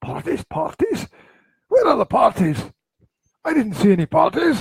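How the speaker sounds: put-on very high, drunk-sounding, poor Scottish accent. Joking in conversation, retrying the line after asking where the accent went, attempted Scottish accent. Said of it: "Where's the Scottish accent go?".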